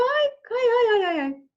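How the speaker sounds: very high-pitched, loud cartoon character voice. Demonstrating pitch range for men imagining a cartoon character, cartoon character voice. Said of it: "imagine you're doing a cartoon character".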